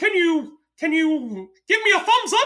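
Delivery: very high, squeaky cartoon mouse voice. Describing how characters talk to kids, doing a Mickey impersonation. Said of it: "Mickey impersonation".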